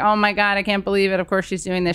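ordinary talk

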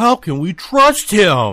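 mock whining, nagging voice with swooping pitch. Recapping a movie scene for listeners, whiny Cyclops impression. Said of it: "he's like, whiny tone".

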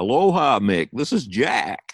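loud, high American drawl. Retelling Jack's phone call a week later, imitating Jack's American drawl. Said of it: "This American drawl".

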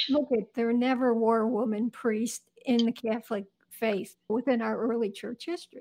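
normal talking voice

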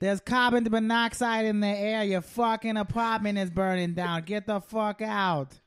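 put-on Boston accent. Warning someone their apartment is burning down: put-on Boston accent. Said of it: "That was my Boston accent".

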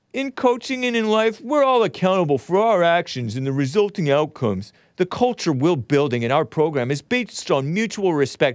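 mocking, sarcastic reading with open mockery. Reading a coach's released statement aloud: mocking read of Brent Venables. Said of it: "I'm gonna mockingly read his".

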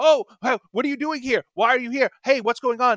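high, pushy, hectoring reporter voice, yelling. Retelling how reporters questioned new arrivals: imitating reporters yelling. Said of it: "Fox News is yelling at them like".

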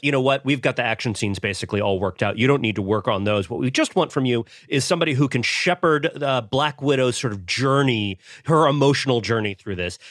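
ordinary delivery

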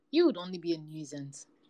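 plain reading voice

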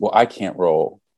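plain

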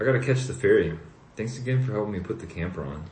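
ordinary delivery, nothing marked

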